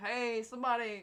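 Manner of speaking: put-on annoyed tone. Retelling calling out to drivers at the heating rack: imitating own annoyed call. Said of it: "I was slightly annoyed at that point".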